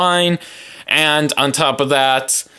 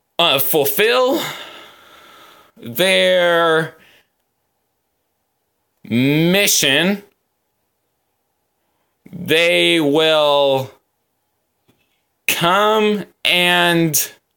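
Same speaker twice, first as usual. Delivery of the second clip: very slow, hesitant, halting reading aloud; 4 semitones higher than usual. Reading a text aloud, the speaker admits being slow, in slow reading. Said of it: "I'm slow at this".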